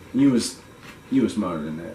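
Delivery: ordinary talk, nothing marked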